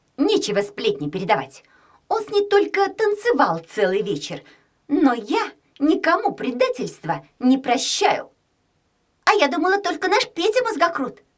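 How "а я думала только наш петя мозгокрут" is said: delighted, full of delight, pitched up. A girl reacts to another girl's gossip about a boy: delighted. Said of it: "сказала Алена с восторгом".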